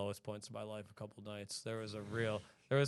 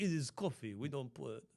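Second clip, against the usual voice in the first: slow put-on French accent; 4 semitones higher than usual. Imitating French coffee purists in a put-on French accent. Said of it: "I don't know what this accent is".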